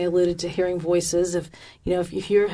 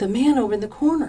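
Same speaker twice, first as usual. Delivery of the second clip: hushed whisper, pitched much higher; 5 semitones higher than usual. Retelling a woman pointing out a man in the corner, whispering. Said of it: "So why are we whispering?".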